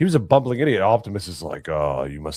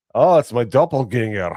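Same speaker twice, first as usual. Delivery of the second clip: put-on Scottish-accented speech; 8 semitones higher, 7 dB louder than usual. Retelling what a lookalike said on meeting at a meetup: imitating a scottish accent. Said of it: "That Scottish accent".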